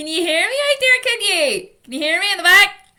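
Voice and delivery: loud, high-pitched shouting. Speaker addressing an audience, checking those at the back can hear: shouting. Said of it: "I'm shouting a lot".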